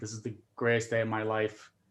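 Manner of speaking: robotic, flat monotone with no inflection. Imitating Swedes speaking English: imitating flat, emotionless English. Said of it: "same level, no inflection, no emotion whatsoever. Very robotic".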